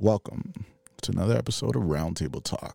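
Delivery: dramatic, gloomy movie-style intro narrator voice. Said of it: "Like I'm in the movies".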